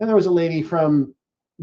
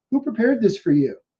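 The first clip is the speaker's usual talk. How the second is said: mock teasing, playfully suspicious tone, pitched up; 6 semitones higher than usual. Retelling what the lawyer asked after pulling them aside: imitating a playful suspicious question. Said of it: "playfully, suspiciously".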